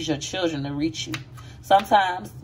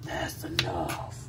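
whispered, raspy, manly voice; 12 semitones lower, 10 dB quieter than usual. Retelling what a man said while cooking, in that manly raspy voice. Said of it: "that all manly raspy voice".

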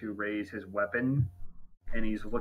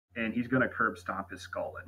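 ordinary talk, nothing marked

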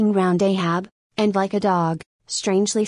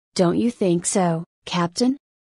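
ordinary delivery

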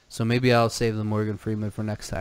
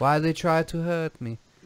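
put-on, high-pitched Belgian-French accent; 6 semitones higher than usual. Trying out accents with a co-host, admitting it's a hard one: Jean-Claude Van Damme impression. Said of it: "Even like Jean-Claude Van Damme's a hard one".

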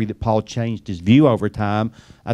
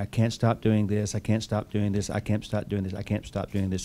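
mock woeful, looping, repetitive lamenting; 9 dB quieter than usual. Retelling an old comedy sketch, a client in counseling: imitating someone lamenting. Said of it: "he's just lamenting".

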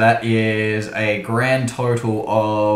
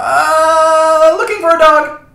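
put-on very high, loud, drawn-out little-kid voice; 8 dB louder than usual. Answering a baker who shouts up at the roof: child voice. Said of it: "I reverted to his child voice".

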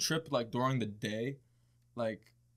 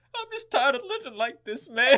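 put-on, very high, raised tearful sobbing lament; 12 semitones higher, 7 dB louder than usual. Retelling a friend's words while he cried during a movie: imitating someone crying. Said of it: "So he starts crying".

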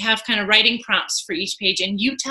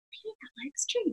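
very hushed, soft, high half-whisper, barely said; 9 semitones higher, 13 dB quieter than usual. Retelling reading a story to oneself, imitating own past half-whisper. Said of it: "I was just kind of whispering".

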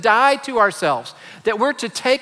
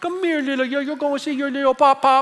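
put-on high, doting, cooing baby talk; 5 semitones higher than usual. Describing how the adults in the house talked for a week, in baby talk. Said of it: "talked in baby talk".

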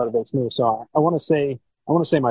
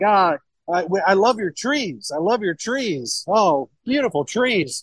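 mock-elated, overjoyed, much higher pitch; 7 semitones higher than usual. Retelling a man's reaction on hearing the speaker is from Ohio: imitating an elated man. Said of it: "He's like elated".

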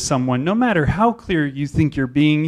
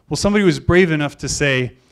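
ordinary talk, nothing marked

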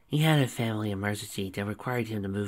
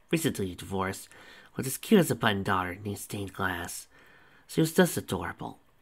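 ordinary delivery

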